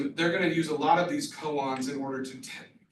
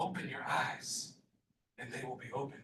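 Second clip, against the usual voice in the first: very hushed, soft whisper; 2 semitones lower, 10 dB quieter than usual. Retelling what a nun would say into the ear: imitating a whisper. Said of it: "whisper in my ear".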